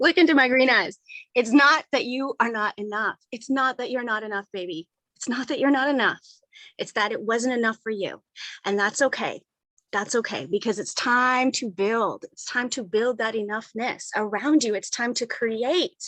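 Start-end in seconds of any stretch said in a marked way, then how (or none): none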